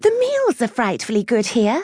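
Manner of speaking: very high, swooping voice climbing upward. Octavia breaks in after Clementine snorts, voice rising. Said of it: "her voice rising".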